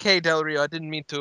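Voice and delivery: put-on Mexican accent. Retelling one person apologizing to another, in a mexican accent. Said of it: "now I'm in a Mexican accent".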